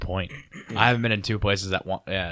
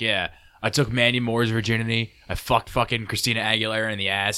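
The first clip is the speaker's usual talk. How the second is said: ordinary delivery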